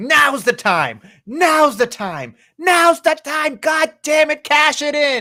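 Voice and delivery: shrieking, very high-pitched screaming. Acting out an imagined match moment, a wrestler urging a cash in: imitating Nia Jax screaming. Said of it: "Nia is just screaming at her".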